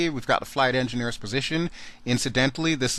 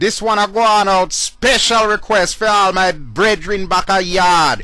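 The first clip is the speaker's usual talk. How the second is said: put-on Jamaican patois, very loud and high; 7 semitones higher, 11 dB louder than usual. Special request shout-out to the brethren, special put-on voice. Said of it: "maybe I should do it in a special voice".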